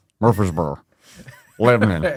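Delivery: mushy, mumbled put-on Southern Tennessee accent. Joking about tennessee place names, the speaker says them in a mumbled tennessee accent. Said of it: "You put cotton balls in your mouth".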